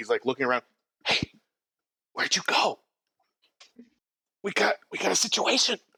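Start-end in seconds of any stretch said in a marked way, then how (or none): 1.1-5.8 nervous whisper, higher pitch. Voicing a nervous guard looking around for someone: whispering nervously. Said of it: "He just kinda starts whispering around".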